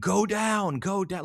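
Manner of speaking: very high, stretched, drawn-out holler. Retelling how a coach screamed from the sideline: imitating Kirby Smart screaming. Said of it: "he starts screaming".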